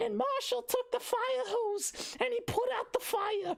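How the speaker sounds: squeaky, very high, silly, goofy storybook character voice. Parent showing how they read stories to their son, silly cartoon character voice. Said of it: "I have to read in Planky's voice and in Big Dog's voice".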